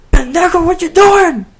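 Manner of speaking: very high-pitched, loud scream. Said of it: "screaming at, at him".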